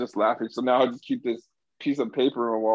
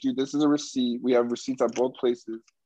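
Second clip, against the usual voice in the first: plain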